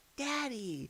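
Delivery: very quiet little half-whisper, high and hushed. Retelling how David quietly called out after sneaking out of bed: imitating a child half-whispering.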